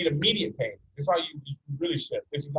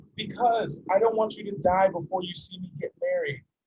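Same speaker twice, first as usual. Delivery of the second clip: mock crying, tearful, higher pitch; 4 semitones higher than usual. Retelling a daughter pleading with her father, imitating a crying daughter. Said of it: "Seeing his daughter cry".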